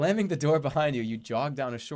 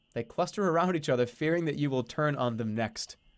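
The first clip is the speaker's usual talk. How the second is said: ordinary talk, nothing marked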